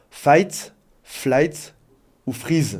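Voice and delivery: English pronunciation. French speaker uses an English expression, asking viewers for likes: English accent. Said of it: "mettez un pouce pour mon accent anglais".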